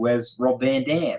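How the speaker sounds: put-on Australian accent. Retelling what an australian fan asked: imitating an australian accent. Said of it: "Captain Aussie".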